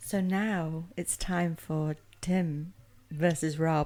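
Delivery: subtle, slow, sensual voice, very drawn out. Announcing the show intro after being asked to scream it: subtle, sensual announcement. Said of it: "I thought I'd do it a little bit more subtly".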